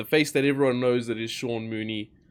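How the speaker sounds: normal talking voice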